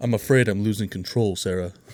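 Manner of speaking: put-on measured, sophisticated old radio noir narrator voice. Acting out a noir scene line addressed to Sarah: 1950s noir detective voice. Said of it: "It's so measured and sophisticated".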